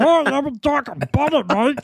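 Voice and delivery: very high-pitched Australian accent. Doing an impression when asked: Australian Bobcat Goldthwait voice. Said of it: "Do an Australian Bobcat Goldthwait".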